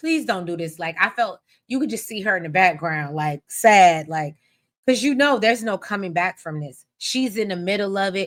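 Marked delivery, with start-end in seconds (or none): 0.0-0.8 put-on pleading, begging voice. Recapping a scene where Eva begs another person: retelling a plea. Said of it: "Eva is pleading with her".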